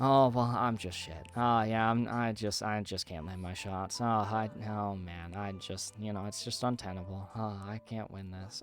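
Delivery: mock-despondent voice. Speaker acts out how he sounds when losing in a voice channel, imitating own despondent voice. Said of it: "you can hear in my voice how despondent I become".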